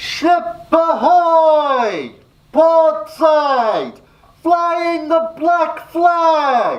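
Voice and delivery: very high, loud sailor's call, "ahoy" drawn out. Speaker calling out after the others' guesses: loud shouting. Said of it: "calls out in a loud voice".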